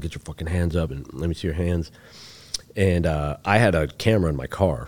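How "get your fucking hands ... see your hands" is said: normal talking voice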